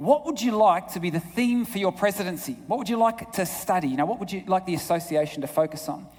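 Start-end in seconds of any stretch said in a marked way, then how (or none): none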